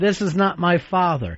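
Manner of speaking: ordinary talk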